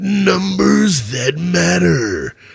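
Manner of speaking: big announcer voice, rough and creaky. Host introducing the weekly football numbers segment: big voice guy impersonation. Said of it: "That was my big voice guy impersonation".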